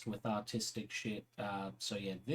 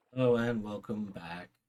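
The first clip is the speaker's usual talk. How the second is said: disappointed, let-down voice. Greeting viewers again after returning to work: disappointed voice. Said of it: "hear the disappointment in my voice".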